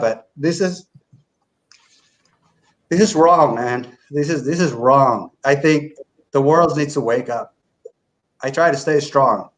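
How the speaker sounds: tearful, breaking voice, speaking through tears. Speaker finishing before letting another person speak, crying while speaking. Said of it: "I'm not crying because I'm weak".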